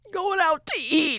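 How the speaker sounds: very high-pitched, tearful, blubbering sobbing cry. Retelling a press conference after an NCAA tournament loss: imitating someone crying.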